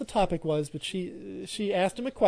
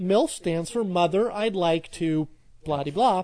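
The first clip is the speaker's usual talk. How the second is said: normal talking voice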